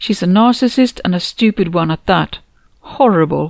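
plain

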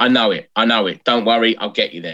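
ordinary delivery

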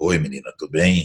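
calm voice, dropped low and deep. Retelling greeting a small girl who cried: imitating own calm, deeper voice. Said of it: "e aí a voz mais grossa".

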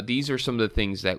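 ordinary talk

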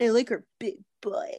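put-on douchey guy voice. Speaker doing a practiced bit for a co-host, in a douchey man voice. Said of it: "I hate your douchey man voice".

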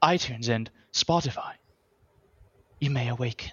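put-on British accent. A podcast host asking listeners for reviews switches to a fake British accent. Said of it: "And I'm British now".

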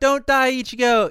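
high, loud screaming cry. Retelling a scene where a character screams out: imitating a scream. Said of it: "and then screams out".

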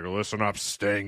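gravelly, grinding wrestler promo voice, like chewing glass. Retelling a wrestling promo in the ring: imitating Ole's gravelly voice. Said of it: "with his gravelly, you know, like he's chewing glass".

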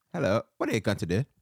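put-on British accent. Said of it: "dig into your inner British".

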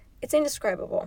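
voice tight with emotion. Speaker telling the story of their brother openly and honestly, choked up. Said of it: "I'm getting choked up talking about it".

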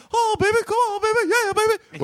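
very high, hyped-up megaphone-style delivery. Imitating a wrestling manager hyping through a megaphone: Jimmy Hart's megaphone hype. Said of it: "he would do".

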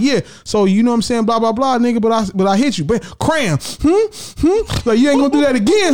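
put-on short-of-breath wild animal voice. Imitating an animal voiceover, sniffing and short of breath: imitating a breathless, mad animal voiceover. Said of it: "he's sniffing and mad".

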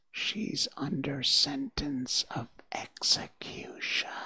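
slow, soft, hushed whisper. Narrating a rabbit on tiptoe speaking close to a girl's ear, whispering.

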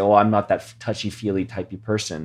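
normal talking voice

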